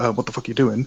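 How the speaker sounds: plain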